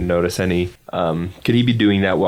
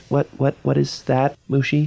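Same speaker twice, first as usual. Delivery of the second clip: whispering, pitched higher; 7 semitones higher than usual. A player character points out a strange plant to Mushi, whispering. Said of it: "and I whisper because he said to be quiet".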